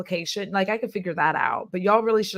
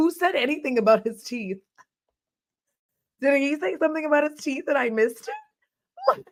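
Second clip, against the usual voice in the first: high voice, words broken up by laughter; 7 semitones higher than usual. Talking about a couple's engagement, laughing while talking. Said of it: "The reason I'm laughing like that".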